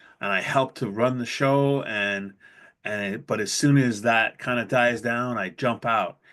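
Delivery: normal talking voice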